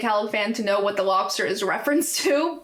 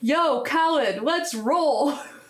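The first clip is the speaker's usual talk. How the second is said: easy, mild, drawn-out calling out; 4 semitones higher than usual. Retelling a video where someone arrives at a house: imitating someone shouting. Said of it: "he just shouts into the abyss".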